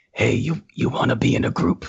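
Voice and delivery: low, rough, creaky, rasping voice. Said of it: "he speaks like [name]".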